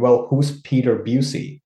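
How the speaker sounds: ordinary talk, nothing marked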